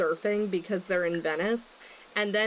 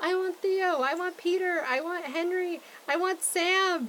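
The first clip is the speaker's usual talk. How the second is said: put-on, very high, drawn-out toddler tantrum shriek; 10 semitones higher than usual. A parent acts out their daughter's tantrum from last night: imitating a child screaming. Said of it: "she was throwing a tantrum where she was screaming".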